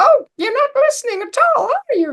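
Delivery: very high, squeaky, cartoony voice. Suggesting changing the voice in your head into a cartoon one, Mickey Mouse voice. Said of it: "You could change it into a Mickey Mouse voice".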